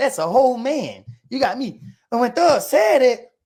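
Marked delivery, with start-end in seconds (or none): 0.0-1.8 mock cracking up mid-sentence, words tumbling through laughter. Retelling how Thug reacted when Roscoe spoke: imitating Thug laughing while talking. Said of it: "he bust out laughing like".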